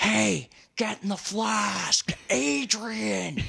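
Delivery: slow creaky high drawl. Doing an impression when asked: Little Nicky voice. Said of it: "Little Nicky".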